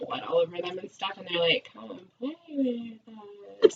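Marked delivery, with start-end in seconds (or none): 1.7-3.7 put-on eerie, slow, drawn-out creepy little girl voice. Retelling a scene where two bloody little girls call out: imitating a creepy voice. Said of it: "in a really creepy voice".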